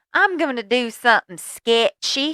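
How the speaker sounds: put-on high, very loud, cute Southern kid accent. Retelling what a little boy answered when asked, in an adorable southern accent. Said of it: "in the most adorable Southern accent".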